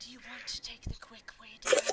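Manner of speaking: voiced stage whisper. Narrating a grinning character who leans over to a child, whispering. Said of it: "over and whispers".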